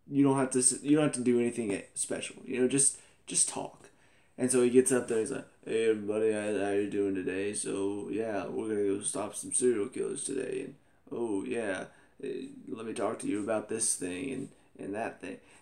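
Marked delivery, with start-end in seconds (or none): 5.6-15.3 flat, level monotone drone with no inflection. Retelling how a man addressed everyone at work, imitating monotone speech. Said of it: "it's just like so monotone".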